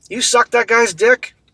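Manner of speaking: fired off quickly, high, with rising intonation. Redoing the narrator's shouted question: Dante from Clerks voice. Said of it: "He sounded like Dante from Clerks".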